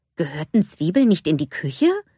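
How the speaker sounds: ordinary delivery, nothing marked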